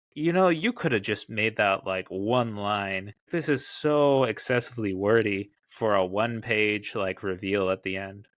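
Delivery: normal talking voice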